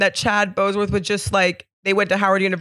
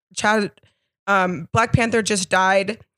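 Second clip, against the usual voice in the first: ordinary talk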